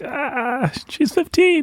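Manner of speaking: high, startled, shocked squeak.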